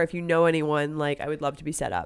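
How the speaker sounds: ordinary delivery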